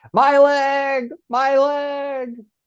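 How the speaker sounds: mock very high wailing scream, drawn out. Reading a listener message, speaker imitating the screaming 'my leg' guy. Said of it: "the guy who always screams".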